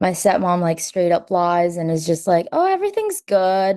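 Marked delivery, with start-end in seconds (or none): 2.5-3.8 mock high, super-nonchalant, breezy and casual. Retelling the stepmom lying to police at the door, imitating a nonchalant reply. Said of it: "acting super nonchalant and, like, casual".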